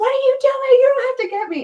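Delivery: shrieking yell, very high and loud. Retelling a friend's daughter caught in the garage: imitating someone screaming. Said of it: "she starts screaming at him".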